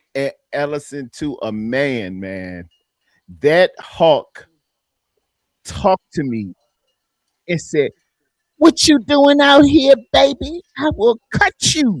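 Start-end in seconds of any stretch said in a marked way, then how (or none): 8.6-12.0 very high seventies street gangster voice. Retelling what a man said at the party: imitating a seventies gangster. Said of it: "he talks like a seventies gangster".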